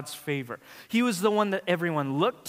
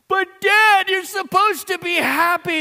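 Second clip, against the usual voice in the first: acted, high, loud, tearful little girl sobbing; 9 dB louder than usual. Father retells his child's reaction when he said he wasn't happy: imitating a child crying. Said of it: "And the crocodile tears and the fountain of sadness".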